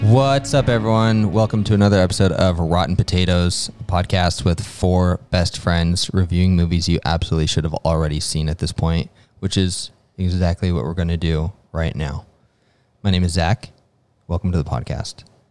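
deadpan, uninflected, very low monotone drone. Welcoming listeners to a new podcast episode: flat monotone, no inflection. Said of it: "I don't think you inflected your voice once".

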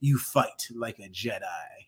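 veiny, growly villain voice, low, soft, slow, drawn-out. Retelling a lightsaber fight scene, in a growly Palpatine voice. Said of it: "veiny, growly Palpatine voice".

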